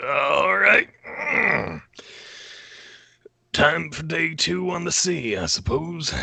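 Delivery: exhausted, groggy, very slow, drawn-out high voice. Voicing a halfling who just woke up, rubbing his eyes: exhausted groggy halfling voice. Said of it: "He looks exhausted".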